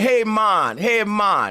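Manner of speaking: put-on very slow, lilting, sing-song Jamaican accent. Praising how Jamaicans say their words: imitating a Jamaican accent. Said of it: "I like the way they hit that motherfucking".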